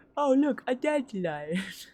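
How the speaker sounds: cartoon sloth character voice, fully in character. Answering a request from chat: Sid the Sloth voice. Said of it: "He's like".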